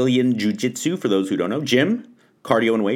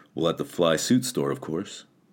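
put-on deep, cool-guy voice; 8 semitones lower, 6 dB quieter than usual. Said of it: "he's this really deep, kinda cool guy voice".

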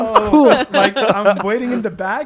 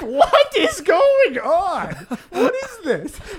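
play-acted, very slow, drawn-out, high nervous laughing disbelief; 8 semitones higher than usual. Retelling reacting to a reckless driver on a cliff road: imitating nervous laughing speech. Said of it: "just started laughing nervously".

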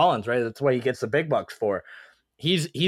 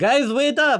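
bad put-on Italian accent, higher and louder; 11 semitones higher, 5 dB louder than usual. Joining a teasing imitation of a player: bad Italian accent imitating Danilo Gallinari. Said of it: "I can't do an Italian accent".

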